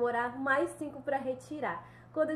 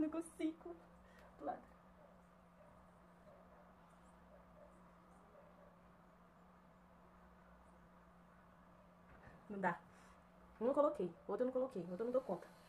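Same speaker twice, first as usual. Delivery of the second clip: sad, upset, much quieter voice; 14 dB quieter than usual. Unable to get the second tinted contact lens in, sad. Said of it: "Tô triste, tô muito triste".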